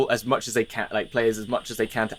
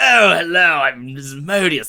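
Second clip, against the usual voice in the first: posh English voice, pitched higher and louder; 4 semitones higher, 7 dB louder than usual. Showing others the classic way to voice a character, posh English Asmodeus voice. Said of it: "posh English person for Asmodeus".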